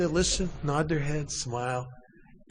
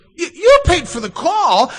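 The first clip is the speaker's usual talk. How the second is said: shocked disbelief, very high, very loud, pitch shooting up; 13 semitones higher, 13 dB louder than usual. Retelling a phone call with Mom, imitating her voice shooting up an octave. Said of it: "her voice shot up an octave".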